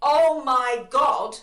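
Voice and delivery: very loud, high, full-volume shout. Retelling waking up in the night: retelling a shout at full voice. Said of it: "at the top of my voice".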